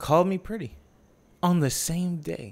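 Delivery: very slow, high, drawn-out, word-by-word savouring delivery. Sharing a story about being complimented, said slowly. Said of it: "I'm going to say this slowly".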